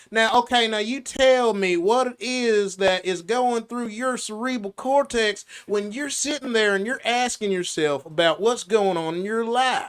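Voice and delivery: heavy, thick Southern country drawl, soft and quiet. Showing how an accent makes anything sound country, in a thick country Dr. Phil accent. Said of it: "that accent makes anything sound country".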